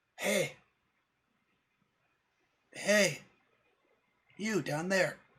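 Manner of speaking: very high, very slow, drawn-out talking bird voice. Voicing a blue jay calling down from a tree: talking blue jay voice. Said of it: "this bird is chirping ... all of a sudden it says".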